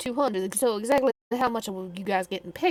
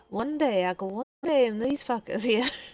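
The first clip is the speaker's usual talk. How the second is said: put-on muttering under breath, quieter; 5 dB quieter than usual. Retelling what she muttered to echo: imitating muttering under breath. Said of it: "muttered under her breath".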